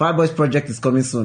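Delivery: loud, excited shout.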